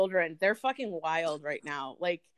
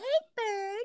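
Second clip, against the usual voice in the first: put-on baby talk, higher pitch; 14 semitones higher, 3 dB quieter than usual. Talking like a baby after being asked to: baby talk. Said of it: "talk like a baby".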